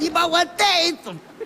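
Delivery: high-pitched, loud shouted wail.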